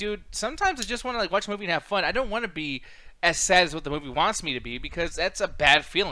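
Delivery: ordinary talk, nothing marked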